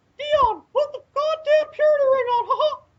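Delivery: very high cartoonish squeak. Addressing Dion amid group banter, in a Mickey Mouse voice. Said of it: "Calm down, Mickey Mouse".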